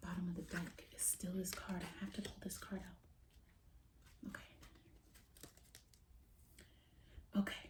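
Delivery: very quiet, hushed whisper under the breath. Speaker pulls cards from the deck while channeling a message, whispering. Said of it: "I don't know why I'm whispering".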